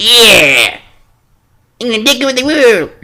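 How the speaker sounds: "yeah" pitched very high and stretched out. Imagining a cartoon duck reading this, in a Donald Duck voice. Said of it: "I can't do a really good Donald Duck impersonation".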